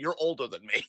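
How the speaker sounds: put-on bone-dry, unamused deadpan, dead straight. Retelling a funny moment where Priest answers, Priest's deadpan reply, retold. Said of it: "Priest deadpan is just like".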